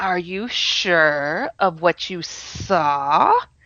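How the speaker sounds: hissing snake voice with dragged-out s sounds. Retelling what a thing said over their left shoulder, in a snake-like voice. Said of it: "a snake like voice ... dragging his S's out like a snake".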